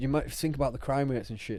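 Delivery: ordinary talk, nothing marked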